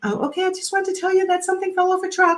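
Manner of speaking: uncertain, nervous upspeak, lifting at phrase ends. Coaching how not to deliver bad news to a client; nervous question inflection. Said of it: "not be like".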